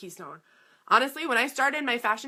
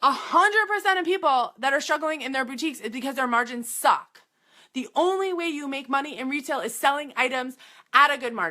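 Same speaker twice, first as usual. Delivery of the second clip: fired-up, heated, impassioned delivery; 3 semitones higher than usual. Speaking to listeners and getting worked up: yelling passionately. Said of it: "I'm yelling now".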